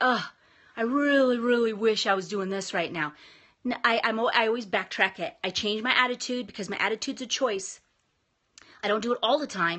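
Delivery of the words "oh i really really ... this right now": usual speaking voice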